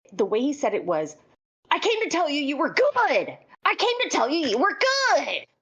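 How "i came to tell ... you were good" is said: put-on very high, raised yelling outburst. Retelling how a performer spoke when coming to apologize: imitating someone yelling. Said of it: "he wasn't yelling like I was yelling just now".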